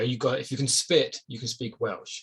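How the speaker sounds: ordinary talk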